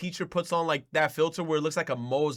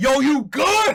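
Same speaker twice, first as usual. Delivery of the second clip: very loud, shrill, high, confrontational shout; 9 semitones higher, 10 dB louder than usual. Showing how to greet a stranger after being told to say it louder: saying it louder. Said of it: "you say it louder".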